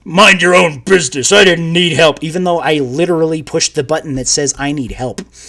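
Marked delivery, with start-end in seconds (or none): 0.1-2.2 gruff, stock, generic tough villain voice. Speaker quoting a character they gave a voice to, gruff generic bad guy voice. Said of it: "the most gruff, generic bad guy voice".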